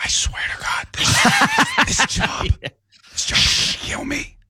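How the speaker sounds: hushed librarian-style whisper. Acting out a librarian complaining about the job: imitating a librarian whispering. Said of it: "they say it in a whisper".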